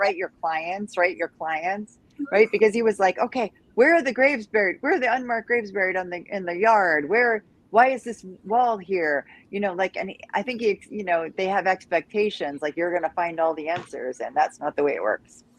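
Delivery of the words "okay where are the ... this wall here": ordinary talk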